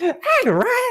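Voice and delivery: very high, squeaky, cartoonish creature voice. Doing a voice in a chapter where everyone voices characters, calling out to ryan. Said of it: "I sound like a Kirby 64 enemy sound effect".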